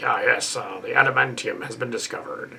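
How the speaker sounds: mock TV announcer voice. Retelling a movie cameo, imitating a TV announcer voice. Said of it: "he got to do the voice of the announcer".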